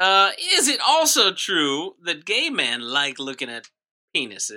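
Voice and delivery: put-on Southern courtroom lawyer voice, swooping pitch. Playing a lawyer defending the naked man in court: put-on Southern lawyer voice. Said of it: "a traditional Southern lawyer".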